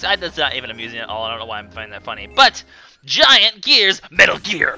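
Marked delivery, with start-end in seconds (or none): 2.3-4.8 bad put-on gruff soldier voice. Naming a game stage aloud, then joking about it: horrible Snake impression. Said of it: "the horriblest Snake impression".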